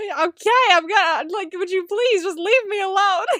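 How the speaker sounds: loud, chaotic yelled outburst. Retelling a scene where the character is yelled at: imitating a character yelling. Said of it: "just the yelling is so funny".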